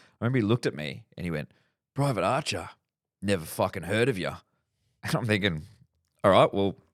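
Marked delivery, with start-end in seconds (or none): 1.9-4.3 hard, arrogant, swaggering tough army officer voice. Retelling an officer's first words to the speaker, in a tough guy voice. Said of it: "He even had the tough guy voice".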